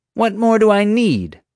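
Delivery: very high, loud, challenging, demanding. Marge, accusing the narrator of stealing and vandalism, demands. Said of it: "Marge demanded".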